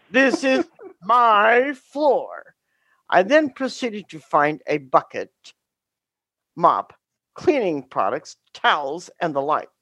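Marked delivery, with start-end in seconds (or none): 0.1-2.5 put-on booming yell. Retelling catching students fighting in class: retelling a booming yell. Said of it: "in my most booming voice".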